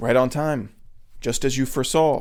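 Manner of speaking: usual speaking voice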